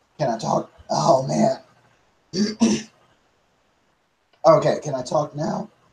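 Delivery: voice giving out, being lost. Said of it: "I think I just lost my voice".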